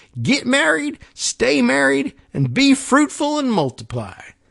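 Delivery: very high-pitched put-on Texan drawl. Voicing texas telling couples to get married, in a put-on texas accent. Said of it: "I'm going to drop all the G's off of the end of these things".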